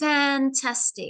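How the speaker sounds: fan- in fantastic pushed, stressed first syllable. Pronunciation lesson on word stress: stress on fan- in fantastic. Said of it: "you could see that I have to push the beginning".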